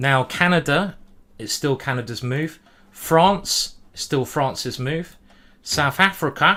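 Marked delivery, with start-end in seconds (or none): 5.6-6.6 poorly done put-on South African accent. Chess player calling out opponents by country, in a bad south african accent. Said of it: "very bad accent".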